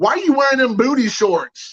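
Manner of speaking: mock blurted kid shout, loud and high. Retelling an unsupervised kid asking a question in front of everybody: imitating a kid shouting. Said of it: "Like super loud in front of everybody".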